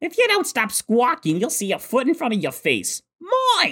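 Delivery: very high, sing-song, swooping pitch cartoon cat voice. Reenacting a Team Rocket scene line by line, Meowth voice.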